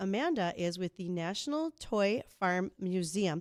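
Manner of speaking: slow, careful, deliberate word-by-word delivery. A host introduces the upcoming guest and her museum, saying it slowly. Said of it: "I have to say that slowly".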